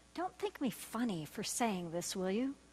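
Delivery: soft, very quiet, hushed murmur. Retelling what a man leaned over and said to the speaker, soft, hushed voice. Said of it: "in a softer, more hushed voice".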